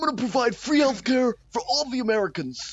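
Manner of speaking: put-on high-pitched voice, preaching manner. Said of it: "I'm Bernie Sanders".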